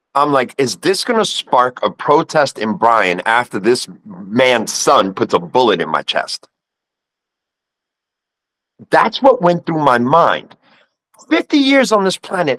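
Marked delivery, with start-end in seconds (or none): none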